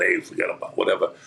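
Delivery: put-on voice of a big, heavy man. Describing how a writer from the Bronx talked: Richard Price impression. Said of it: "like a three hundred fifty pound guy going".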